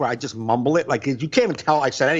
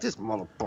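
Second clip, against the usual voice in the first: very quiet, low, indistinct mumble; 4 semitones lower, 11 dB quieter than usual. Showing how he said a joke's throwaway tag: mumbled. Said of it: "Like just me mumbling it".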